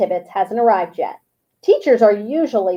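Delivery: ordinary delivery, nothing marked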